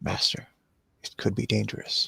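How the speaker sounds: very low, hushed whisper. In a roleplay, answering his master, very low tone. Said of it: "in a very low tone".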